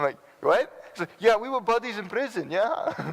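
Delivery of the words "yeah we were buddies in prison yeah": very high, poor, fake Russian accent. Telling a story about meeting a former prisoner at camp, the speaker quotes him in a bad Russian accent. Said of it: "that's not even a very good accent. Sounds like a Russian accent".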